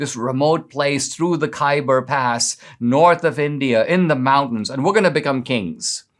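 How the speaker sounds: ordinary talk, nothing marked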